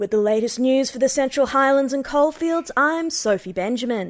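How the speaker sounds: regional commercial radio newsreader voice. Describing regional commercial radio news, doing a radio newsreader voice. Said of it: "radio voice".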